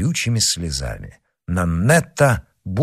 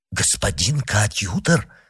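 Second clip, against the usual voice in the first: plain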